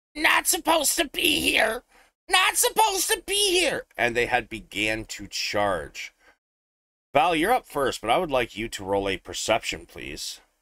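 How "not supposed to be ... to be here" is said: very high screaming fish creature voice. A game master voicing creatures that start screaming at the players: screaming creatures. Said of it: "These creatures start screaming at you".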